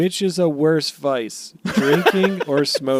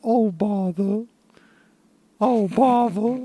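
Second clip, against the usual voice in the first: put-on cartoon bear character voice; 4 semitones higher than usual. Answering on request what the One Piece is: Winnie the Pooh voice. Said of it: "in your best Winnie the Pooh voice".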